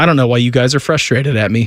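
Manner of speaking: put-on expressionless delivery. Retelling how he looked at them both and spoke, mimicking a deadpan delivery. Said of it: "looks at us both deadpan and goes".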